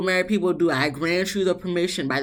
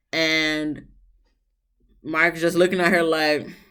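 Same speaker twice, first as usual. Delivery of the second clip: normal talking voice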